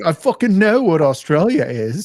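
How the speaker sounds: put-on Australian accent. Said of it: "she talks in her accent".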